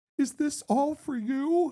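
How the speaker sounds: crying, very high-pitched and very slow. Retelling what a crying mother asked on set: imitating someone crying. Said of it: "she's just crying".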